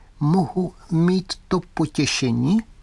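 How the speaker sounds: slow, thin, high doll voice from back of head. Narrator reads Lieutenant Fritz's line after the old man presses a button, thin voice. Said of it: "tenkým hlasem".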